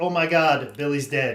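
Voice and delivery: put-on, mimicked woman's voice. Describing an awful movie to a co-host, imitating a random woman's voice. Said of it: "Just some random woman's voice".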